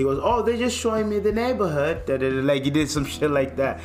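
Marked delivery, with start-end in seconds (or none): 0.2-2.1 put-on British accent, much higher. Retelling how a guy answered when questioned in Moss Park, imitating a British accent. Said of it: "talking in a British accent".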